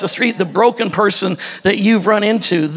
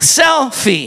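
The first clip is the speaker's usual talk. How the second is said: "sel" in selfie stressed, punched and shouted. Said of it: "Emphasis on the cell part".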